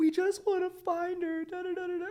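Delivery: put-on very high, loud tearful crying voice. Retelling a news clip of the woman's mother, imitating someone crying.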